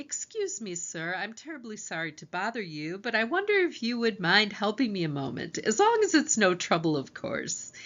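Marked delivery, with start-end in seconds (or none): none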